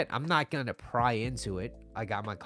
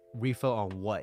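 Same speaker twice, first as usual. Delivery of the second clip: put-on hostile tone. Retelling a barista's reply to a refill request: imitating a hostile tone. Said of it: "just a little hostility in that voice".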